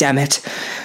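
ordinary delivery

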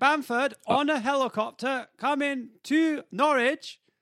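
high, drawn-out, stretched announcer-like delivery.

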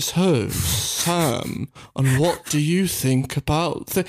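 very slow, robotic voice, dragged out like a machine. Mocking an interviewer in behind-the-scenes clips, the speaker imitates him talking like an AI. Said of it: "talks like he's like an AI".

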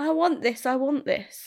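put-on screaming child's yelling voice. Retelling a shop trip with Amelia, imitating Amelia screaming. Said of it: "she just started screaming".

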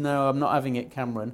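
ordinary delivery

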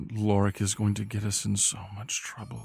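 muttering under the breath, as an aside. Speaking as a character in a game scene, muttering under the breath. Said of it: "he says under his breath".

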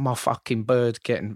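put-on Essex accent. Retelling a guy's rant on The Only Way Is Essex: imitating an Essex accent. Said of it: "I don't know the accent".

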